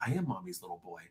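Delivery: very quiet, half-whispered aside. Retelling what a wrestler half-whispered to his partner: imitating Dominik Mysterio half-whispering. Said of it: "he whispered to her saying".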